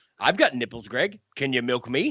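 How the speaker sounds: put-on sarcastic, deadpan voice. Quoting a film line as Robert De Niro delivered it: imitating Robert De Niro, sarcastic and matter-of-fact. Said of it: "in the so sarcastic, smartastic kind of way".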